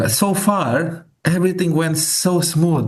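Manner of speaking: sarcastic, complaining tone.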